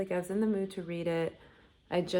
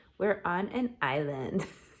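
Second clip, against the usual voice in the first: put-on young influencer voice with creaky vocal fry. Imitating the audiobook narrator reading a line: imitating vocal fry. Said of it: "she'd be like".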